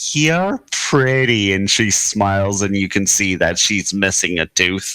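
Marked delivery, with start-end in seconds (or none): 0.1-1.5 put-on high, squeaky, squealing little girl voice. Voicing a little girl at a counter: squealing little girl voice. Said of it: "Little girl kinda squeals".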